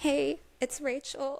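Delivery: mock down and defeated voice, pitched high. Retelling a call to a manager while depressed: imitating own depressed voice. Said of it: "That's literally how I sounded".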